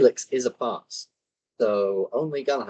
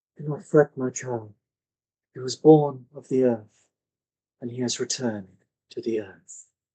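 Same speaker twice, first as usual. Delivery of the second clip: speaking in a woman's voice. Narrating a scene where a voice speaks to a grieving woman: a woman's voice. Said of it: "this woman's voice".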